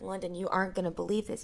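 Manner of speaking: plain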